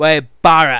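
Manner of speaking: put-on loud, booming northern English accent. Explaining whose accent is mocked, then mocking Wade Barrett's accent. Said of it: "I'm mocking his accent".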